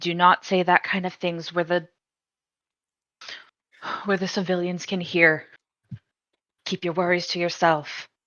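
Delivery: hushed, soft half-whisper, pulled in close. Voicing a character pulling a companion aside to warn him: half-whispering in character. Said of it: "just whisper".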